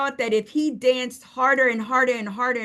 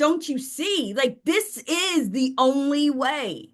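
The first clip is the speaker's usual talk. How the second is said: mock, slow, begging, pleading tone. Retelling how a character sat there pleading: imitating a pleading character. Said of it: "sitting there pleading".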